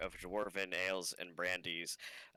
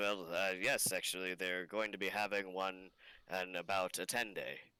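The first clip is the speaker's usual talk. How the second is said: friendly, chatty, hospitable innkeeper voice. A tavern owner tells a customer when the next event will be held, playing the character in a friendly tavern keeper manner. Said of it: "and the proprietor is a dwarven man. / and the proprietor is a dwarven man. Um, his name is Ogden Flamebeard. And he says, "Oh, late travelers, / and the proprietor is a dwarven man. / and the proprie".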